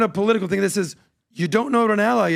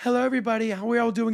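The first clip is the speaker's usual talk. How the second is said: fake, switched-up, polite company-manners voice; 5 dB quieter than usual. Contrasting how the same figure talks to a different room: Kamala Harris impression.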